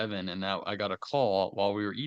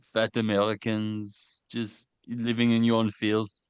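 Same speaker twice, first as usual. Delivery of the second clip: put-on French accent. Doing a bit with another speaker about the turkey and stuffing: fake french accent. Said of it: "one of the better accents that I feel like I can do is a French accent".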